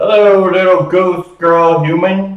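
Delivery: huge, boomy, big, slow booming voice. Narrating the scene, voice the unseen speaker greeting the ghost girl in a big boomy voice. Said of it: "you hear a big boomy voice".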